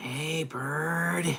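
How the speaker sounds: soft character voice, bird drawn out long. Asked to do Big Bird, offering the only voice that comes to mind: Snuffleupagus voice. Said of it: "the only thing I think of is Snuffleupagus".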